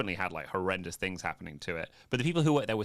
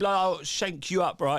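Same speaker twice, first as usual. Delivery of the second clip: terrible put-on English geezer accent, very high, loud; 10 semitones higher, 5 dB louder than usual. Attempting an accent from something watched, admitting it's terrible: bad put-on geezer accent. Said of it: "I can't even do it".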